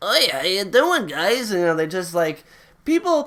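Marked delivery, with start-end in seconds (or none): 0.0-1.5 English with a Yiddish-inflected accent.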